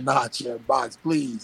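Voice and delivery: put-on, slow, drawn-out pleading. Retelling begging the champ to box before the fight: retelling own pleading. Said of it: "I was pleading with him".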